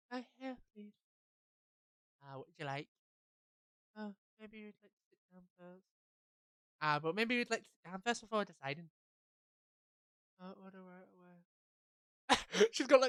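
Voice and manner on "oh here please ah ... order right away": put-on dreary girl voice, mumbled, sounding defeated. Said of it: "a depressing voice like the other girl".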